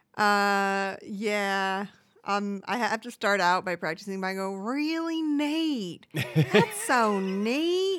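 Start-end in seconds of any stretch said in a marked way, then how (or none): 4.6-8.0 high, slow voice, neatly stretched long. Practicing an impression as a vocal warm-up: Mindy voice. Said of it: "Are those your Mindy vocal warm-ups?".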